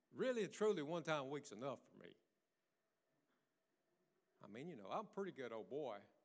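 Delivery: very low, soft, tongue-in-cheek sarcasm. Speaking to the congregation on a Wednesday night, being sarcastic. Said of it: "I'm being sarcastic".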